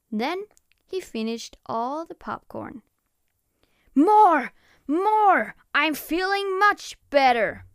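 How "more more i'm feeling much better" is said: boisterous, loud, high monster holler. Big Monster, having finished all the popcorn, calls out: yelling. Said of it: "Yelled Big Monster".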